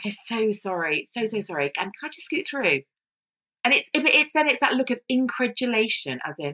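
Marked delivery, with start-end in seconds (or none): 0.1-2.8 put-on passive-aggressive voice. Retelling own apology to parents blocking the pavement: imitating own passive-aggressive apology. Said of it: "I sound passive aggressive".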